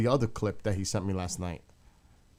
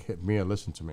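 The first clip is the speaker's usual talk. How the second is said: normal talking voice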